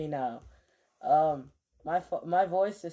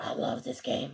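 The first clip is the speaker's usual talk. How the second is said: odd, breathy, affected put-on voice, half whispered; 4 dB quieter than usual. Retelling how they used to make their voice sound weird on stream: imitating own old weird voice. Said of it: "made my voice like".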